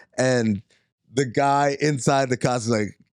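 ordinary talk

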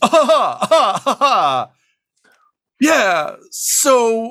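strong, magical-sounding voice. Voicing a distant magical voice heard by the party: extraordinarily powerful thaumaturgical voice. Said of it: "an extraordinarily powerful, uh, thaumaturgical voice".

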